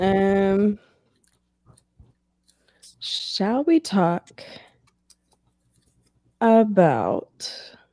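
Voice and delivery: distracted, very slow, soft, drawn-out, trailing um. Moving on to a new topic, the speaker talks very slowly. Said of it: "You talking so slowly".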